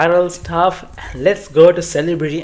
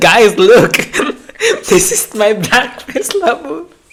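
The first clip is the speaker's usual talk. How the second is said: mock thrilled, loud, excited, sing-song high; 7 semitones higher, 5 dB louder than usual. Retelling how a usually monotone woman showed off her labubu in a video, imitating someone excited. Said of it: "She was so excited".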